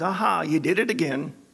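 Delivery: put-on scornful, mocking, taunting jeer. Telling how the devil delights in our failures, acting out his words: retelling a mocking taunt. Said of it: "he mockingly says".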